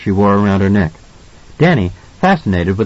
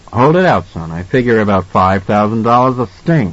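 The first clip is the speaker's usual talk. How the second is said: plain reading voice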